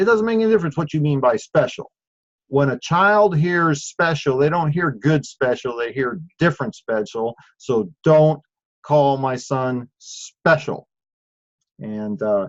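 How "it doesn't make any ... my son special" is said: normal talking voice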